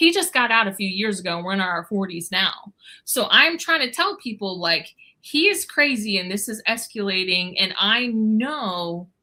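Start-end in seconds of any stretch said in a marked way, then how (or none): none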